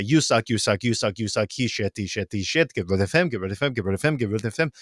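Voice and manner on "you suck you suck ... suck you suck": plain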